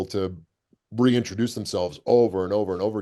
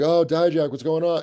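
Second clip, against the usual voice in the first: put-on, high, called-out street shout; 8 semitones higher than usual. Retelling how people on the street called out to him: imitating people yelling a greeting. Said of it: "yelling out to me".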